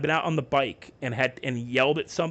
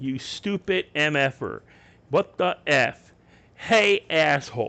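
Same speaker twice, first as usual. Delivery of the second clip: mock, very slow, very drawn-out yelling; 3 dB louder than usual. Retelling yelling at drivers who cut them off: imitating own past yelling. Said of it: "And I have yelled".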